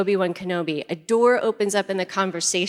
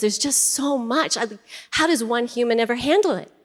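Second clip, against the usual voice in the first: put-on tearful sobbing voice, higher; 3 semitones higher than usual. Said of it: "He's sobbing, he's crying through his tears".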